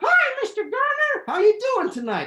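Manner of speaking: very high, loud ventriloquist dummy voice. A ventriloquist greets his puppet, who answers back: Oliver puppet voice. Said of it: "your coronavirus ventriloquist, and my little buddy, Oliver".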